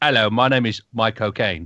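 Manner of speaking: put-on Cockney accent. Showing the trick for saying the actor's name in his accent: Michael Caine accent. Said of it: "to say his name in his accent".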